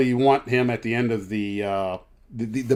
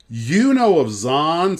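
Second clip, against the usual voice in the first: put-on very slow, drawn-out, high New York accent; 4 semitones higher, 4 dB louder than usual. Retelling a flight attendant's question on a crew van: imitating a new york accent. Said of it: "this girl had a New York accent".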